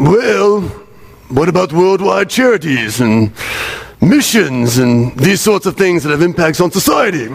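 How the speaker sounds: stuffy scholarly voice with cockney. Imagining church scholars debating what's unique to Christianity, Masterpiece Theatre host meets chimney sweep. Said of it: "they speak like a mix between that old guy from Masterpiece Theater and a British chimney sweep".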